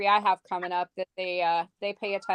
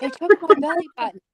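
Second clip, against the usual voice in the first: high, loud, secretive, confiding stage whisper; 8 semitones higher, 7 dB louder than usual. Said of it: "whispering to me".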